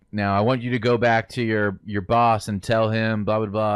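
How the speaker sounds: ordinary talk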